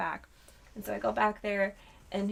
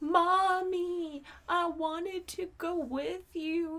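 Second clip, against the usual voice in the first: mock crying, sobbing small child, very high voice; 9 semitones higher than usual. Mother retells what her son said from the back seat, imitating a sobbing child. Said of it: "He was sobbing and he was like".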